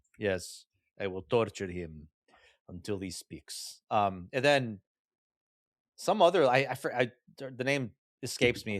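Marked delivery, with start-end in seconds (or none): 1.0-3.8 put-on bad Russian accent, lower and quieter. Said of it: "with his bad Russian accent".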